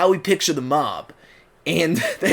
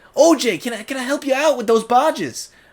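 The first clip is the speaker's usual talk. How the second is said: younger, more youthful, higher-pitched voice; 8 semitones higher than usual. Showing how a voice should sound, the speaker demonstrates a younger-sounding voice. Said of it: "it needs to be more like this".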